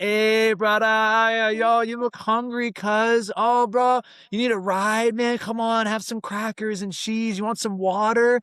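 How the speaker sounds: squeaky, very high, friendly surfer dude voice. Retelling a story, the speaker imitates surfer dudes in a Volkswagen bus. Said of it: "surfer dudes with their long hair".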